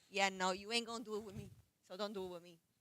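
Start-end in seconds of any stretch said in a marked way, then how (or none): none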